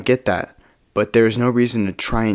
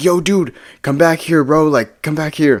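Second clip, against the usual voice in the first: pitched-up, shouted yell; 5 semitones higher, 3 dB louder than usual. Retelling how a friend confronted a guy: imitating someone yelling. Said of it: "Johnny starts yelling".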